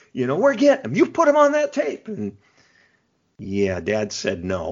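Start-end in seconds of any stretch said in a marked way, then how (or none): 0.4-2.1 mock very high, loud, insistent screaming yell. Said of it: "He's yelling and screaming at me".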